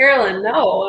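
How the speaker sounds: usual speaking voice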